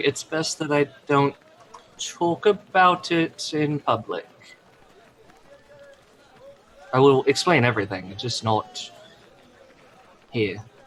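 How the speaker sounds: voice dropped down low, hushed and discreet. Voicing a character who lowers his voice to avoid talking publicly: lowered voice. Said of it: "he kind of lowers his voice at this point".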